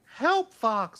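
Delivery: put-on voice, pitched way up, loud and belted. Showing another speaker how a Star Fox character sounds: voicing Slippy from Star Fox. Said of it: "I'm using my voice acting skills".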